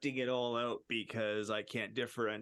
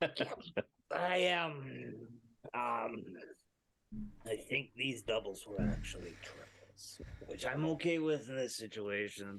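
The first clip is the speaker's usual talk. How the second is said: put-on acted drunk voice, in character. Answering another character in the game while acting drunk. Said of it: "you sound pretty drunk".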